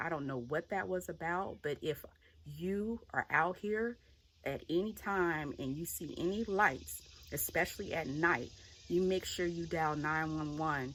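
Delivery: plain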